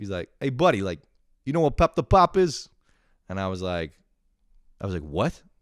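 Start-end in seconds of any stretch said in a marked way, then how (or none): 0.4-2.7 put-on New York accent, higher and louder. Retelling a man asking about pop the pop, imitating new york accent. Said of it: "he sounded like New York".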